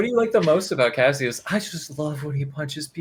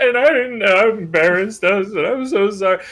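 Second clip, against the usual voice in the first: put-on drunk speech, higher and louder; 5 semitones higher, 4 dB louder than usual. Playing a character leaning on a companion while leaving: fake drunk speech. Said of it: "still fake drunkenly holding Ysern".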